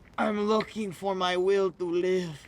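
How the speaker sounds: loud, laid-on, put-on Mexican accent. Checking whether the other person is still on the line, in a fake Mexican accent. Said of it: "Is that a fucking fake Mexican accent?".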